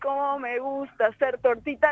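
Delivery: ordinary delivery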